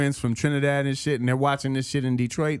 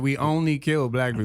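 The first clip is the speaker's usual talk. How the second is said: plain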